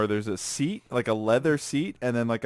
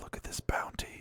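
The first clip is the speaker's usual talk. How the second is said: very soft, hushed, awed whisper. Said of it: "I'd whisper to myself".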